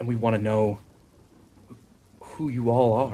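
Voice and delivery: put-on nervous, anxious, stuttering boy voice. Voicing a nervous character asking newcomers who they are: nervous stuttering boy voice. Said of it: "He's just anxious".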